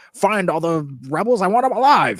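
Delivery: loud swooping call. Describing a scene from A New Hope, imitating Darth Vader raising his voice. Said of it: "he raised his voice once".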